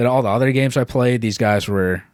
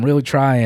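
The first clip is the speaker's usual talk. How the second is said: ordinary talk, nothing marked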